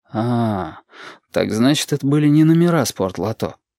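ordinary delivery, nothing marked

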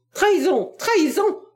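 piercing, shrill, very high outcry. Her Majesty speaks after the others have spoken, crying out. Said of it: "cria Sa Majesté la femme à la gueule".

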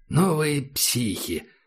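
sneering, openly disdainful, contemptuous scoff. Reading a character's remark about the others in the group: contemptuous. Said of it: "произнес Ахмед с презрением".

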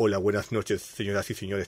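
put-on, polished radio announcer voice. Describing the narrator of a Latin dub, imitating his radio announcer voice. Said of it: "tiene una voz radial así como".

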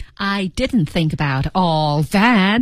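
hardest stress falls on "all that". Lesson on where the stress falls in an english sentence: stress on all that. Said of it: "重音在后面all that".

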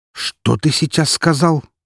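stunned, shocked disbelief. Uvarov asks again after hearing what was just said, in a shocked voice. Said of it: "переспросил Уваров шокированным голосом".

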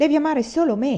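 sudden high exclamation. Narrating a man's line to the woman he holds, exclaiming. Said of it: "esclamò".

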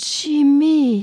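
murmured in a breath. A vision speaks to the narrator, murmured in a breath. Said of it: "murmura dans un souffle".

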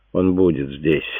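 ordinary delivery

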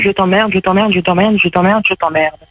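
usual speaking voice

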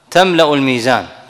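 ordinary talk

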